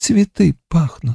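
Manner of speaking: very quiet whisper. A girl repeats her words to the man leaning close, very quiet whisper. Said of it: "таким тихим шепотом".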